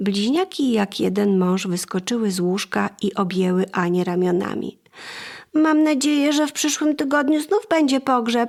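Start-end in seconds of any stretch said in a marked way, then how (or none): 5.5-8.5 called out, much higher pitch. Gerald, one of the twins, jumps out of bed to hug Anne, called out. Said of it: "zawołał Gerald".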